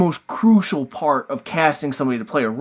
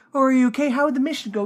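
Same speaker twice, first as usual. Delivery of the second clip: fake worried tone, pitched up; 11 semitones higher than usual. Imitating a villain who feigns concern for someone: imitating feigned concern.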